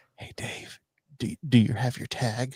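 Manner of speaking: soft, breathy whisper right at the ear. Picturing a hunting partner crawling up to ask about the tag: imitating someone whispering. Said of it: "whisper in your ear".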